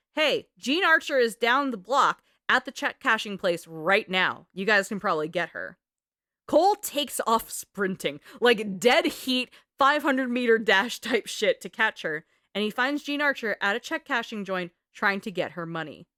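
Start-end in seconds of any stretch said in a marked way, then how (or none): none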